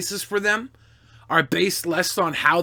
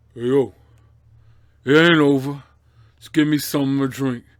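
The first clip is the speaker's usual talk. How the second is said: bad, deep, low put-on voice; 4 semitones lower, 4 dB louder than usual. Answering a viewer's request for a Stallone impression: bad Stallone impression. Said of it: "I don't do a good Stallone".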